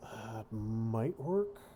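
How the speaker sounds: might stressed and drawn out slowly. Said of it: "Emphasis on might".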